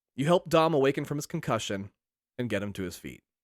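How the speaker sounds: ordinary delivery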